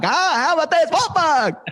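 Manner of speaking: very high-pitched voice, laughing. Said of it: "good Alex Becker impression".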